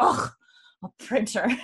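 put-on disdainful, scornful scoffing in a Scottish accent. Retelling a TV scene, imitating a character's Scottish scoff. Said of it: "the greatest Scottish scoff I've ever heard".

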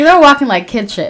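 plain

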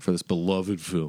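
said sarcastically. Asking how many of a film's reviews are one star: said sarcastically. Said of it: "Why'd you say it like that?".

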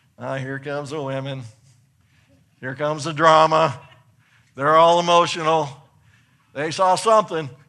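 very loud, booming voice at full volume. Acting out the apostles' response to the women's testimony: imitating the apostles.

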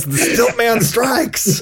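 theatrical, very high, dramatic heroic battle-cry yell. Retelling a villain jumping out of a closet: imitating a yell. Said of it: "he just yells".

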